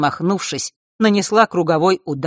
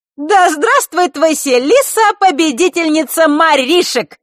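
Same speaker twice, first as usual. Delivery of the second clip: very high, shrill, loud shout; 12 semitones higher, 6 dB louder than usual. Over the others' laughter, someone shouts to the group: loud shout. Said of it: "громко прокричала гроза под хохот остальных".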